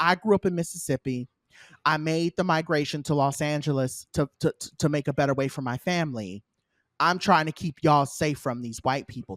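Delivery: ordinary talk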